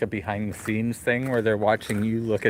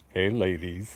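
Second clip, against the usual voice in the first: deepened voice, dropped low; 4 semitones lower than usual. Asked to redo his deep voice from earlier, greeting the ladies: deep voice. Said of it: "Do it in your deep voice like you did earlier".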